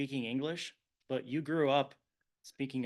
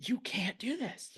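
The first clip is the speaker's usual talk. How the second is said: very slow, deliberate, high-pitched yell; 8 semitones higher than usual. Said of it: "I started yelling right back at her".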